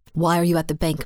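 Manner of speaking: plain reading voice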